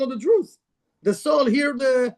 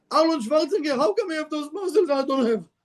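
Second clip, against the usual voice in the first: high, whiny voice with a laugh. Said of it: "It's like you're telling me".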